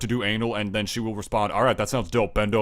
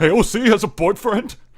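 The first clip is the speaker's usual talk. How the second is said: put-on very high, loud, angry, outraged disbelief; 10 semitones higher, 6 dB louder than usual. Mocking the other speaker as an angry simp typing: imitating an angry simp. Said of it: "You just sound like an angry simp".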